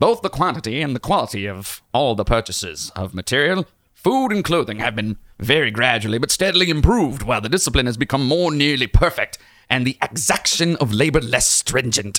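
rooster character voice. Reading out an old-fashioned passage for the others, Foghorn Leghorn voice. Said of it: "He sounded like the the rooster from the Looney Tunes".

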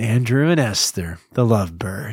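slow, tender, put-on very loving tone. Reading a donor shout-out after being asked to sound loving: put-on very loving tone. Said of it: "I want these donor shout-outs to sound very loving".

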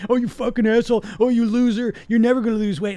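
mock, loud, high, nasty, belittling mean voice. Speaker acting out their own perfectionist voice after a binge, put-on mean perfectionist voice. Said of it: "This mean, mean, mean voice".

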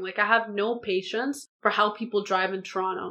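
ordinary delivery

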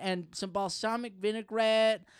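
usual speaking voice

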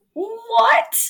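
high-pitched, shocked yelp of what. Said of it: "And I was like".

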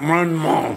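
put-on mumble as if mouth full. Acting out answering a woman with a full mouth: acting out talking with full mouth. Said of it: "Y usted dice con la boca llena".

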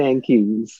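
FM disc jockey radio announcer delivery. Turning an insult around, saying thank you in progressive fm radio voice. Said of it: "in that progressive FM radio voice".

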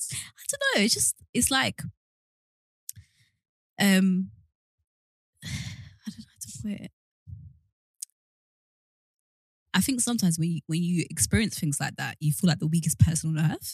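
tearful voice, crying while talking. Explaining why they feel sad after being asked why they are crying: crying while talking. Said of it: "why are you crying?".

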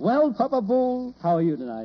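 cheerful, upbeat voice. In a drama, a character greets another for the evening: happy. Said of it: "You sound happy".

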